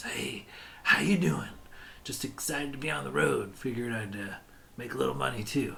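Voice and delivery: friendly, confidential, low-key confiding tone. Ale sellers welcoming a customer at their stand, in hushed tones. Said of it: "they welcome you in kind of hushed tones".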